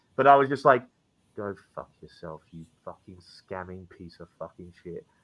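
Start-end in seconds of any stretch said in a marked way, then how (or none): 1.4-5.0 very quiet, low, hushed, taunting whisper. Retelling taunting someone face to face so no one could hear, retelling a whisper. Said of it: "I had to whisper it so no one else could hear".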